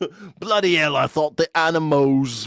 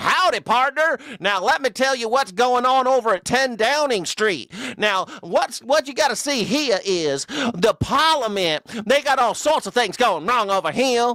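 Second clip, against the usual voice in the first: put-on American cowboy accent, pitched up; 8 semitones higher than usual. Imagining an American reporting the news on the BBC, mock cowboy American accent. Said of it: "hear an American being like".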